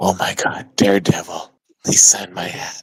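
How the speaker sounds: quietest hushed whisper, almost to oneself. Speaking in character, almost to oneself: quietest whisper. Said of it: "In the quietest whisper".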